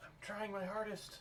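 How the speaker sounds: high-pitched, strange creature voice. Narrating a game scene to the players as a Mapak speaks, Mapak voice. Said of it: "you hear uh, a Mapak voice".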